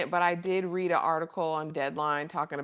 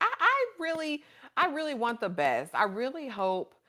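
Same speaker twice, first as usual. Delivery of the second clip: high, excited voice. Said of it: "You sound so excited".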